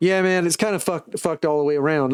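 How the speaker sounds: put-on unintended slip into a Southern accent. Retelling what a man said, trying his Jersey accent but it comes out Southern. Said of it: "That was Southern".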